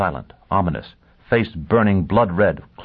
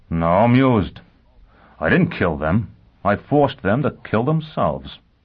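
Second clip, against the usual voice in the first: usual speaking voice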